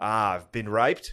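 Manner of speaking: put-on Australian accent. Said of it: "Speaking of Australian accents".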